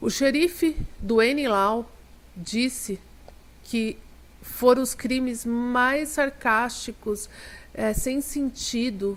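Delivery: slow, halting stutter, stumbling over words.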